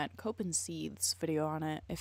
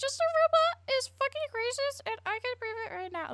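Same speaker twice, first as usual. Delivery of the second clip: mock, very high, sneering, preachy moralizing voice. Mocking people on Twitter who call someone racist: mocking Twitter moral brigader. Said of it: "all moral brigading, being like".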